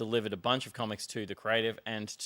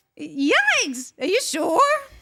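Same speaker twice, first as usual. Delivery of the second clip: put-on bird voice; 13 dB louder than usual. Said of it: "You do a good bird voice".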